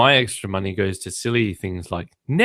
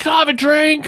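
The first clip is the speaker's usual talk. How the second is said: put-on very high-pitched, loud, yelled child's voice; 4 dB louder than usual. Retelling a child with headphones asking his mother: imitating a child yelling. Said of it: "he's yelling at my wife".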